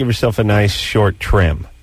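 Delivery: normal talking voice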